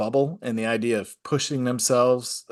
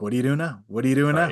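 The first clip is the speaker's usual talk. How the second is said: put-on, puppy-like eagerness with pestering tone. Retelling following crime scene guys around like a puppy: imitating own puppy-like eagerness. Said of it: "following 'em around like a puppy being like".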